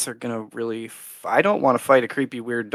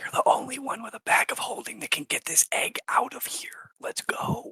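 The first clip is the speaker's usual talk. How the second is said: barely audible, very quiet, hushed whisper; 11 semitones higher, 11 dB quieter than usual. Speaking in character to a companion during the game: whispering. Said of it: "I sort of whisper to Asherina".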